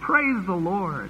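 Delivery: slow, drawn-out, joyful, warmly praising tone. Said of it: "they already start shouting".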